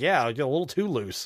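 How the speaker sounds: ordinary delivery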